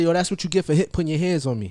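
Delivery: ordinary talk, nothing marked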